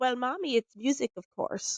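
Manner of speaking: mock, amused words spoken through a laugh. Retelling a voice heard inside the head: imitating a laughing voice. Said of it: "this laughing kind of voice".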